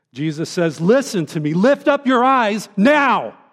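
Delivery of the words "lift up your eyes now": emphatic, forceful, strongly stressed, insistent words. Preaching, quoting Jesus the emphatic way he says it, emphatic, forceful. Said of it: "let me say it in the emphatic like he does".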